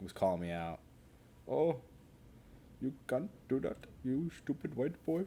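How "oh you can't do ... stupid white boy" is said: put-on East Indian accent, pitched up. Explaining why an insult hits differently, imitating someone from East India in a put-on Indian accent. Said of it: "if it comes from a different accent".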